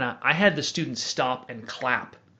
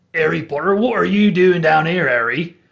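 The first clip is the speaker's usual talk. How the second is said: put-on loud West Country British accent; 3 semitones higher, 8 dB louder than usual. Demonstrate the voice of your guy Gideon, talking to Harry Potter in a West Country Hagrid voice. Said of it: "West Country British accent".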